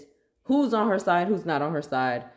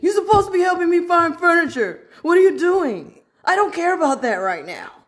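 acted, very emotional, very high-pitched, loud outburst; 12 semitones higher, 8 dB louder than usual. Showing the other person what they sounded like, imitating someone really emotional. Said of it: "that sounded really emotional".

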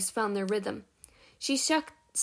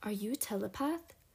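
soft, hushed, leaning-in half-whisper; 8 dB quieter than usual. A man leans in close to ask a girl a question, half-whispering. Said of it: "leaning in to whisper".

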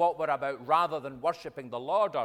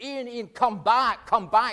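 acted desperate scream, higher and louder; 9 semitones higher, 6 dB louder than usual. Retelling how a distraught widow at a funeral cried out: imitating someone screaming. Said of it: "was screaming at the top of her voice".

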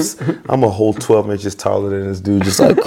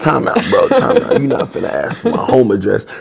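words broken up by laughter; 3 semitones higher than usual. Speaker retells turning down a guy asking for his home address, retelling laughing while talking. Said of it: "I'm laughing like".

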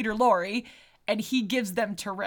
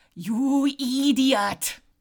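higher, louder put-on cartoon voice; 4 semitones higher, 3 dB louder than usual. Trying a voice to see if the listener gets the reference: Ren voice. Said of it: "Let me try this".

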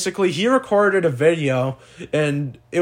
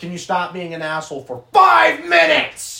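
really aggressive, pissed-off tone, rising. Show exactly how he said it to you, imitating Carter being really aggressive. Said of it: "I'll do it exactly like how he said it".

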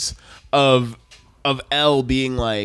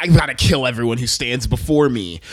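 snide, sneering tone throughout; 3 semitones lower than usual. Act out how he talked, pointing up the tone in his voice, imitating his snide voice. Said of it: "the snideness in his voice".

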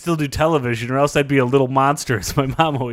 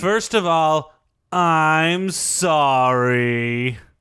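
put-on very slow, drawn-out, half-hearted, insincere teenage delivery. Apologizing to the other speaker for a tweet: insincere apology. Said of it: "that didn't feel completely sincere".

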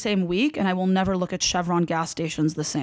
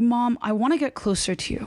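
ordinary talk

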